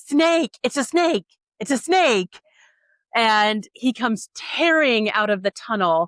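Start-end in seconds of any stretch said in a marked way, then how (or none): 0.0-2.4 acted frantic, alarmed, high, panicked shout. Retelling a man shouting as he came tearing out of a tunnel; imitating panicked shouting. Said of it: "hear him shouting".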